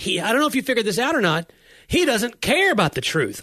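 increasingly worked-up voice. A pastor recounting what he said to his wife about a man: retelling with voice rising. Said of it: "Your voice goes up like that".

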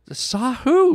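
very high, loud, insistent, demanding tone. Sherry presses Brett after he says he thinks he saw him, demanding. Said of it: "Sherry demanded".

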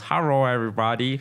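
l's pronounced as r's. Describing a content creator's videos, the speaker imitates his stereotypical accent, l's as r's. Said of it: "pronounces all their L's as R's".

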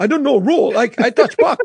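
put-on Russian accent. Retelling a hockey story, quoting Max in his Russian accent. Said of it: "in his Russian accent is like".

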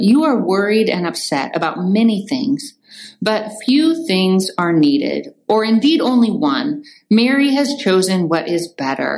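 plain

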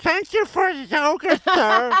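put-on very high, loud kid voice, words mushed by full mouth. Retelling a kid who was sent over to thank him; imitating a kid with full mouth. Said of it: "is that your kid impression?".

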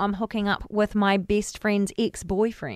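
ordinary talk

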